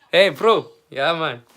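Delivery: friendly-sounding South African accent. Pretending to call a South African friend, the speaker imitates the friend's South African accent. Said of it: "I'm trying to think of his accent".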